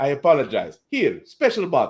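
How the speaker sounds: terrible put-on Russian accent. Retelling what a man said after beating him for two days, in a terrible russian accent. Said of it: "terrible Russian accent".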